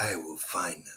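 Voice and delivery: very quiet, low, hushed, menacing tone. Telling someone the line must be said in a Taken voice, then doing a Taken movie voice. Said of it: "in a Taken voice".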